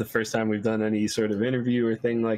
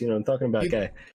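put-on New York Italian street accent. Offering to stay in character, speaking in a put-on New York accent. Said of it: "you want them to talk in a New York accent, you came to the right place".

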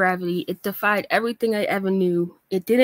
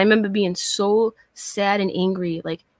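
ordinary talk, nothing marked

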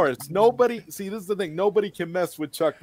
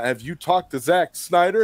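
ordinary talk

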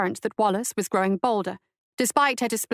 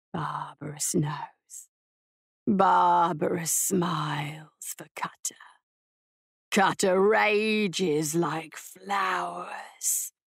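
guttural, halting, very slow voice, "rages" drawn out; 3 semitones lower than usual. Barbarous speaks to the woman who wounded him: guttural, unpracticed voice. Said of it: "The voice behind her was guttural and unpracticed".

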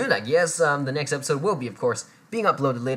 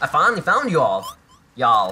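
loud, clumsy, bad put-on Southern accent; 5 dB louder than usual. Reading a game character's line aloud, trying an attempted southern accent. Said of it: "I can't switch accents very well".

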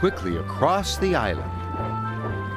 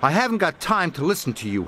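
huffing, faster. Reading a story aloud, the narrator gives Emily's reply to Diesel: Emily huffing. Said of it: "huffed Emily".

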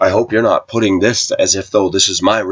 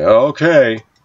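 mock scoffing, dismissive, sarcastic, laughing tone; 4 semitones higher, 3 dB louder than usual. Retelling someone's reply about God providing: imitating a sarcastic laugh. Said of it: "he laughed sarcastically".

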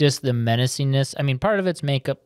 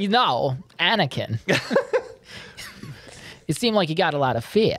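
put-on quirky halting voice, higher pitch; 4 semitones higher than usual. Voicing a Jedi master talking to Anakin: Christopher Walken voice. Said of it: "Get Christopher Walken in there".

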